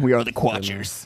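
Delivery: sci-fi space alien voice. Joking about the podcast name sounding like a Star Trek alien: Star Trek alien voice. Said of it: "That sounds like a Star Trek alien".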